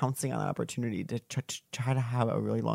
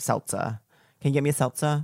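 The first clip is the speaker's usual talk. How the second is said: put-on Long Island accent; 4 dB louder than usual. Imitating the speaker's mom talking, with a Long Island accent. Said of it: "My mom has a Long Island accent".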